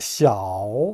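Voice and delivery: 小 falls then rises, dip-rise third tone. Chinese tone lesson explaining the V-shaped third tone mark: third tone dip-rise on 小. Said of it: "제 삼성으로 내려갔다 올라가는 요 성조".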